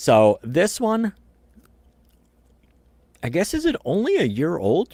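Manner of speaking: talking with mouth full. Speaker discussing a gun caliber while eating, talking with mouth full. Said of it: "I'm sorry, I'm munching".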